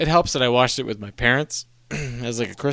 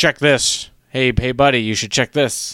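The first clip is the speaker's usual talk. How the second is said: put-on grumbling, grumbly old man voice; 4 dB louder than usual. Retelling a film scene where an old man grumbles advice to bikers: imitating an old man grumbling.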